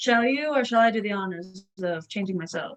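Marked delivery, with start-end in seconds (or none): none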